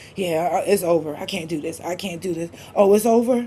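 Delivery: acted crying with choking breaths. Retelling being choked by him, acting out crying between choking breaths. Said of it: "I'm crying in between choking breaths".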